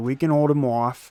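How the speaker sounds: put-on the word "off" said in a Boston accent. Repeating what they just said on air: Boston accent on off. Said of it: "I kind of went into a Boston accent there when I said off. I was like".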